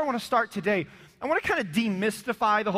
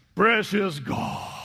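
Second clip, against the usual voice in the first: put-on horror film overdub voice; 3 semitones lower than usual. Mimicking how some people pray aloud, in a horror movie overdub voice. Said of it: "why do you sound like a horror movie overdub voice".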